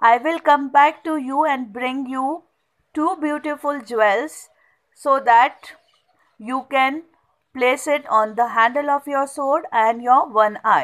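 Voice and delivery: ordinary talk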